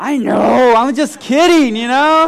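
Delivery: high-pitched, loud, flustered voice.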